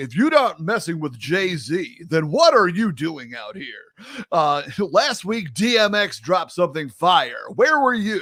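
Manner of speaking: nineties hip hop radio voiceover read.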